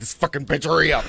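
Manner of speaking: rude, dismissive, careless off-mic aside. Retelling what the crazy guy said on mute during calls: imitating Mike Smith. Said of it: "he would hit mute and be like".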